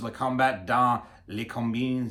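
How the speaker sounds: slow, careful French-accented pronunciation. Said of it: "that's how they would say it".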